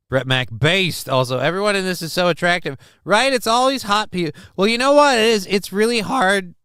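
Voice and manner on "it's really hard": voice cracks, slower pace. Commenting on life in California, voice cracking. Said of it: "Thank you, voice crack".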